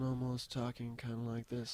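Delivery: flat put-on monotone. Describing how a man sounded when they last talked, imitating his monotone. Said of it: "like monotone".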